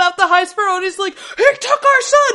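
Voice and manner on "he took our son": put-on scream, higher and louder. Retelling a scene where a character screams about his son: imitating someone screaming. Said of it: "this is where he's screaming".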